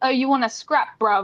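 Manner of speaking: put-on rough, street-style British accent.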